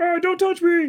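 very high-pitched little man character voice. Voicing a rock as someone picks it up, little guy voice. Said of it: "he's like a little guy on the bottom".

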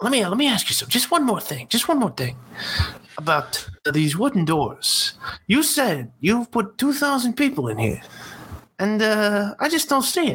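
very high-pitched, gently prodding voice. Acting out a comedy bit idea in the detective's manner: Columbo voice. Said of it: "doing a Fred Leuchter bit where he's like".

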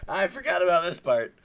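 high, loud, stunned realization. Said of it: "I was like".

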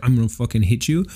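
ordinary delivery

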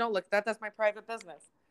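flustered, freaked-out, scolding, protective tone. Retelling a mother's reaction to a found birth certificate: imitating mom freaking out. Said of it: "she freaked out, and she goes".

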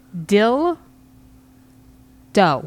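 slow, clear, each word set apart and enunciated. Saying a phrase on a PG podcast, slow, clear, separated words. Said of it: "I'm gonna say this slowly and clearly".

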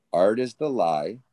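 unhurried, slow delivery. Repeating a quote after being asked to say it again: said slowly. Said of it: "Say it slow again".

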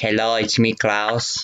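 put-on German accent. Klaus the fish introduces himself, Klaus German fish voice. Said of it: "it's the German fish".

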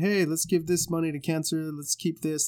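plain

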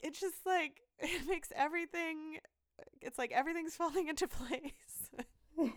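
high-pitched, acted crying through the words. Retelling a talk with him, the speaker acts out her past self crying. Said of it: "I'm like crying".

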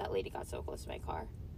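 sudden, low, hushed, panicked whisper.

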